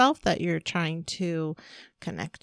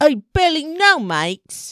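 mock jeering English accent, higher and louder; 9 semitones higher, 10 dB louder than usual. Imitating hecklers mocking someone who came alone, english accent. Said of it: "she's English, so it was more like".

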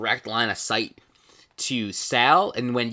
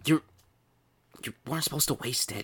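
whispering, much quieter; 7 dB quieter than usual. Role-playing a game scene where one character scolds another, whispering. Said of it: "He's whispering now".

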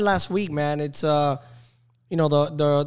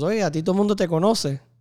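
mock laughing while talking, higher pitch; 3 semitones higher than usual. Retelling what a coach said before the inning, imitating him laughing.

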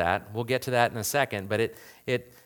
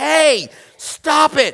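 very high, loud, escalating shrill scream; 11 dB louder than usual. Recounting the moment his wife screamed in bed, retelling her scream. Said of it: "she screams".

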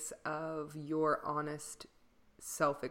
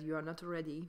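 put-on thick, heavy Belgian French accent; 4 dB quieter than usual. Retelling what a woman at the summer workshop said, in a thick belgian french accent. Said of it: "with her very thick Belgian French accent".

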